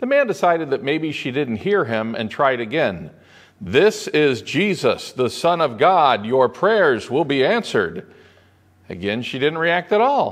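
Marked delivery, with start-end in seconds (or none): 3.6-8.1 put-on grand, most authoritative commanding voice. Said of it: "In his most authoritative voice".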